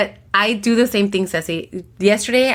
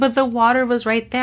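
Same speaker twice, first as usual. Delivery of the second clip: put-on upset, wounded, hurt child's voice; 3 semitones higher than usual. Retelling a child's complaint after leaving her water behind: imitating a child sounding upset and hurt. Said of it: "she was so, like, upset and hurt".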